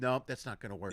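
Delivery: very calm, soft, subdued delivery. Retelling the fight scene, voicing the master calmly: calm Ip Man voice. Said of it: "He's just calm, going".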